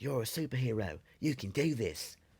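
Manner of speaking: put-on Australian accent. Retelling what the red Batman said to him, in an Australian accent.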